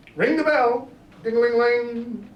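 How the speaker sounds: very high, loud, frantic alarmed cry.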